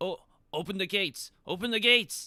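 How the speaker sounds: very high, half-shouted, half-yelled call. A character calls out to the guards at the gates, sort of shouting. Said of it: "He sort of shouts".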